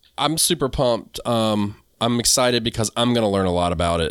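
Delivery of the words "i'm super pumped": plain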